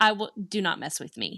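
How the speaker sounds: ordinary delivery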